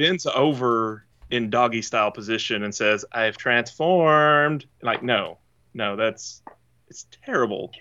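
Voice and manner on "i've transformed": bad put-on Scottish accent, higher pitch. Quoting a character's line while mocking the character: terrible Metroplex impression. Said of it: "terrible, terrible impression of him".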